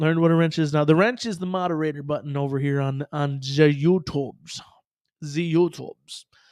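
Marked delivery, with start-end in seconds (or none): 5.2-6.2 put-on German accent. Speaker repeating the site's name in a put-on German accent. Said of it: "we say this with German accent".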